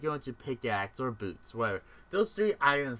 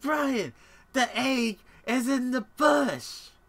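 high shouted yell; 10 semitones higher, 6 dB louder than usual. Retelling what they shouted at someone who was not there, retelling a yell. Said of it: "And I was yelling at him".

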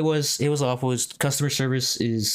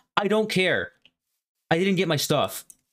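dismissive, high, uncaring mock scream of a woman; 6 semitones higher than usual. Retelling a lady yelling at a worker, imitating her screaming. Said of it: "some lady was like screaming".

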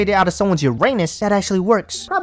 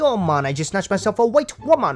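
boastful, bragging, put-on Jamaican accent. Retelling how a man bragged to his buddies, in a put-on Jamaican accent. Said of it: "I have no clue why I just played Jamaican accent right there".

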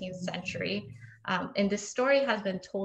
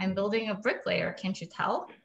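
normal talking voice

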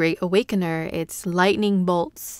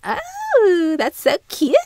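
very high, swooping, squealy cutesy gushing voice; 11 semitones higher, 3 dB louder than usual. Showing how someone with this trait laughs and talks: cute little squeal. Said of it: "she squeals a little bit like".

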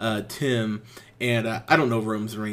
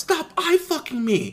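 high, mock yelling. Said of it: "she yells in the middle of the restaurant".

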